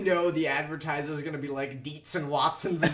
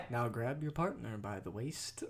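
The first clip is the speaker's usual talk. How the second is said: low, slow, smooth late-night DJ delivery; 4 semitones lower, 10 dB quieter than usual. Imitating a slow, sensual announcer from a video: imitating slow late-night radio voice. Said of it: "late night radio".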